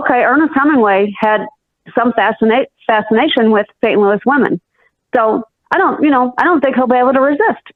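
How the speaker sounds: ordinary delivery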